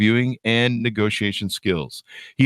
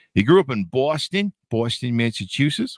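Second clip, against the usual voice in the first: mock Long Island accent, slower. Reading out Paul's introduction, in what a listener hears as a Long Island-sounding accent. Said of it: "It sounds like a Long Island accent to me".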